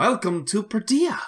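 very high, strained, forced, overeager, over-excited tone. A dwarf woman greets the party at the garrison gate, in a forced over-excited greeting. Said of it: "tries desperately to make this sound overly exciting".

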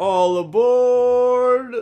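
very high, very loud, with aboard drawn out long. Calling out a line for next week's Polar Express: Tom Hanks impression. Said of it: "did you not think that sounded just like Tom Hanks?".

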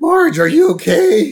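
very high, loud, breathless, winded huffing cry. Retelling a cartoon scene, imitating Homer Simpson: out-of-breath Homer Simpson. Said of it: "he's still huffing and puffing".

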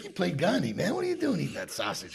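mock playful teasing, high sing-song. Speaker retells teasing a man for eating meat, retelling a teasing remark. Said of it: "I was teasing him".

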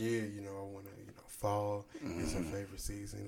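low, hushed, low-key half-whisper. Retelling asking a store worker quietly: imitating own low half-whisper. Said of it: "I'm still low with mine".

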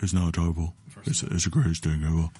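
put-on deep celebrity-style voice. Told to come in like Shaq, the speaker does a Shaq impression. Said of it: "You're supposed to come in like Shaq".

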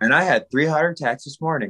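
ordinary talk

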